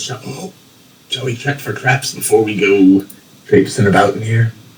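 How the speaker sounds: whisper. As the character Grom, speaking to the rest of the group, whispering. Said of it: "Grom whispers".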